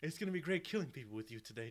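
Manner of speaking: put-on well-spoken English accent. In an imagined film bit, Paddington Bear speaks to John Wick; Paddington Bear voice. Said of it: "well-spoken, English accent".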